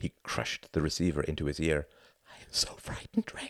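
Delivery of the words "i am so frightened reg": dropped to a tiny, little, soft whisper. On the phone, a woman confides in a man, in a little whisper. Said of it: "Her voice dropped to a little whisper".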